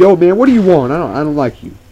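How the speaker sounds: loud, high-pitched, put-on New York accent. Retelling a guy's greeting, in a New York accent. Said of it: "so he's like using a New York accent".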